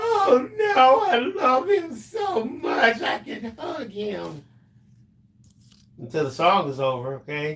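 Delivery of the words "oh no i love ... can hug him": mock sobbing, fake crying. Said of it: "that time I was like".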